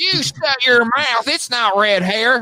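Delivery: piping, very high-pitched voice. Doing an impression of a friend who denies having red hair: imitating Nick. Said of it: "That's my Nick impression".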